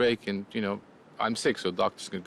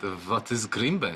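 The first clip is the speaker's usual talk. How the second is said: put-on mimicked Eastern European accent. Retelling what an Eastern European doctor in New York said: imitating his Eastern European accent. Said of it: "And in his accent".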